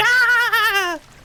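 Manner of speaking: high, loud jump-scare scream.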